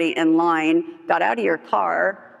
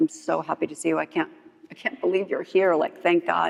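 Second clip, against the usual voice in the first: mock tearful crying voice, quieter; 4 dB quieter than usual. Retelling how a woman in a meeting spoke to the speaker: imitating someone crying.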